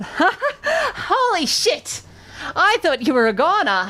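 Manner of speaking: very high, swooping, laughing goblin creature voice. Narrator voicing the goblin next to you, in a laughing goblin voice. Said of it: "the goblin laughs".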